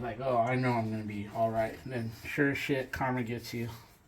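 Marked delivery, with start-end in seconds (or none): none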